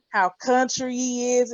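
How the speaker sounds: ordinary talk, nothing marked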